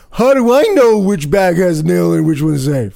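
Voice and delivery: loud yelled voice calling out. A performer retells what a man in the back yelled during the act: retelling a yell from the back. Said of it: "the guy in the back yells".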